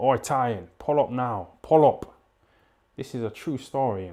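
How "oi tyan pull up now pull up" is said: loud, stretched-out shouting. Retelling a driver calling from his car window: imitating a man shouting. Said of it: "he was shouting".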